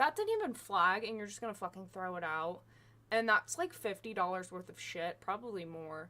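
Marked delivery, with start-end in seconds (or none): 0.0-2.6 play-acted, angry, pissed-off outburst swooping up and down. Retelling a bag check that threw out a bottle: retelling own angry words. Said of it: "that just pissed me off more".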